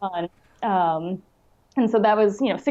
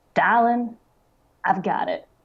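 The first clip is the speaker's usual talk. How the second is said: put-on heavy Southern US accent, thick drawl. Speaker quoting Joy's reply on the phone, in Joy's thick Southern drawl. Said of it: "she has this like thick Southern drawl".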